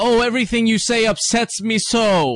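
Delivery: all-out, overwrought, high-pitched scream. Speaker mocks an actor's performance on screen: mock-screaming Eric Bana impression. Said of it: "Bana is just sitting there screaming like".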